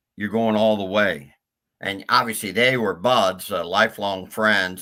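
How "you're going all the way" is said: mock stage whisper, audible aside. Recounting someone interrupting a friend's press conference, retelling a stage whisper. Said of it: "in a stage whisper".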